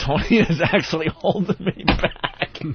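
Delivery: high, slow speech broken by laughter.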